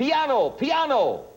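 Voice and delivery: high, yelled police officer call.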